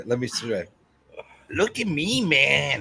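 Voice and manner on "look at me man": very slow, put-on East Los Angeles accent. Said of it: "now you're appropriating the cholos out in East Los Angeles".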